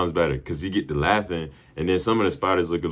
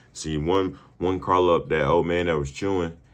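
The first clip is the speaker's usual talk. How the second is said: ordinary talk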